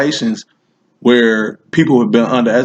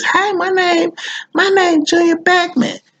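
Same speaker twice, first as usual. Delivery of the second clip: very high, real squeaky voice. Telling a story and showing how an older dude sounded, in Junior Beckman's real squeaky voice. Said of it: "he had a real squeaky voice".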